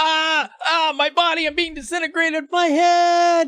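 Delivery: very high, long, drawn-out scream of pain. Narrating a character jumping in head first, screaming while jumping in. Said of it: "he screams as he goes in".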